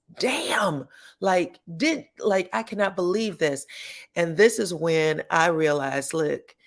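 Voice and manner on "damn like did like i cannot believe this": mock stumbling, halting outburst of disbelief. Retelling a reality show scene, imitating a loud outburst. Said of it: "Clifton immediately and very loudly says".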